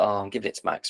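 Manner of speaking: put-on pained voice. A co-host mimics how the other just named his pick, mock pained. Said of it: "You sound so pained as you say that".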